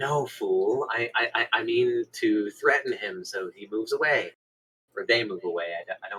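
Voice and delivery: hushed half-whisper, close and quiet. Half-whispering into his ear to threaten him into moving away, half-whispering. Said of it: "I whisper in his ear".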